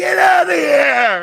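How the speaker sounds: harsh, rough, very loud, high-pitched hollered scream. Retelling a man screaming at someone on the field, imitating a man screaming. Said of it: "This guy's screaming at him".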